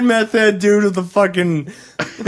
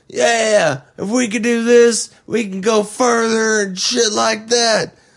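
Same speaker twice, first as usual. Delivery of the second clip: put-on Southern accent, drawn out. Quoting a man who stood in front of him, in a put-on Southern accent. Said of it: "I don't know why I'm making him sound like he's from the South".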